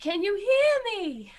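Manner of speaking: very high, shrill yell calling out. Calling out in character to find someone: yelling out. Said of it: "I just yell out".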